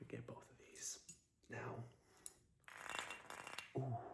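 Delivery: very soft ASMR-style whisper.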